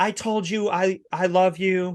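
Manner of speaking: mock angry outburst. Speaker retells what the last girl he dated screamed at him, retelling an ex screaming. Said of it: "She's screaming at me".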